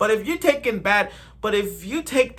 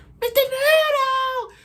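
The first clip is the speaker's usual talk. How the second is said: very high puppet voice, pitched way, way up. Showing that the Elmo voice can be done: Elmo voice. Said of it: "I could do Elmo's voice".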